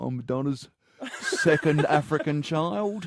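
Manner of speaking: put-on London geezer accent. Acting out a made-up scene about an adopted child in london: london geezer accent. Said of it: "give it an accent like that".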